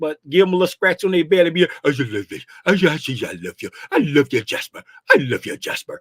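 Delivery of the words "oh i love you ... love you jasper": very low, deep voice. Showing how to talk to a pet, imitating one hundred's voice. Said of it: "That's my one hundred voice".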